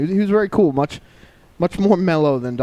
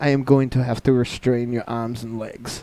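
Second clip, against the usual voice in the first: put-on, vague Eastern European accent. Retelling what the scan technician said to him: vaguely Eastern European accent. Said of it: "in some sort of vaguely Eastern European accent".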